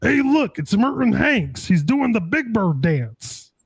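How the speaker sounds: bad, slow announcer voice. Retelling a broadcaster's call of a big play: really bad John Madden impersonation. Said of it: "my really bad John Madden impersonation".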